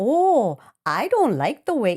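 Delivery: very slow, loud put-on Minnesota accent. Retelling a movie scene, imitating the counter clerk: attempted minnesota accent. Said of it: "I'm trying to do Minnesota".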